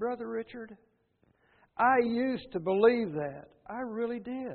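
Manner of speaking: mock quivering, trembling, unsteady voice. A speaker at church retells what a former member told him, imitating a quivering voice. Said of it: "with a quivering voice".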